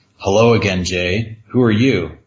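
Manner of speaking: normal talking voice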